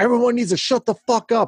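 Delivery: mock, shrill, very high, full-lung scream. Voicing a bar owner silencing the bar: screaming at the top of her lungs. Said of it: "she just screams at the top of her lung".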